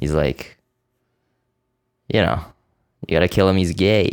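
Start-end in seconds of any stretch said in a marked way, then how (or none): 2.1-4.1 put-on New York gangster voice. Retelling a movie scene as a character: Joe Pesci impression. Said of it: "That's my Joe Pesci".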